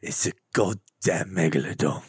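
bad put-on British action-hero voice. Doing a Jason Statham movie line for others: terrible Jason Statham impression. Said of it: "this is actually a very terrible accent".

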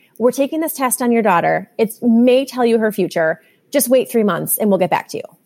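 ordinary talk

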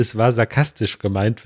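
normal talking voice

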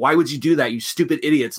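ordinary talk

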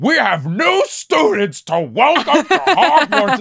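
very high, slow, angry, cross headmaster tone. Mocking how the new actor plays a scene: imitating angry Dumbledore. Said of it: "he just sounds so angry every time he speaks".

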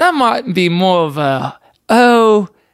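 put-on British accent. Answering a question about last night, joking: put-on British accent. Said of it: "You're doing a British accent".

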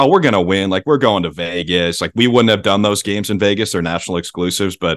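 ordinary delivery

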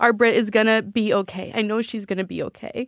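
speaking through tears. Telling listeners she is sure her friend will be okay, crying. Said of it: "ignore the tears".

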